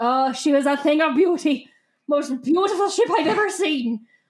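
sudden switch into a put-on Irish accent. Retelling a character's line from the book, Irish accent. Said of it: "Why is Elfangor Irish now?".

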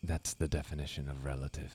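low, very quiet, barely audible half-whisper. Character continuing a conversation about truth, half-whispering. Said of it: "Why are you whispering now".

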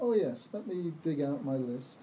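plain

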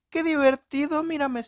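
shrill, very high, crazed, manic villain glee. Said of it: "y así habla".

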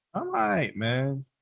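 subdued, troubled, down, bothered voice. Answering the other speaker's how-are-you, sounding bothered. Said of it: "You sound like some shit's fucking with you".

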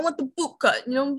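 put-on New York accent. Quoting a guy from math class, in a New York accent. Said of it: "he had like a New York accent".

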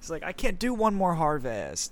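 mock whining, ungrateful-sounding moan, high and swooping. Joking about someone who keeps extending his vowels, a mock-whiny complaint. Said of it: "It was very whiny".

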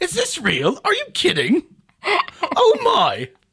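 very high, very slow, exaggerated British accent. Repeating the other speaker's shocked words back: imitating a british accent. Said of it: "that was double British".

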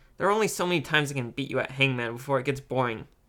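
ordinary delivery

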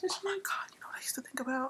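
whispered, hushed and breathy, suddenly dead serious. Speaker tells listeners about a childhood cartoon obsession, whispering. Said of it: "Why are you whispering?".

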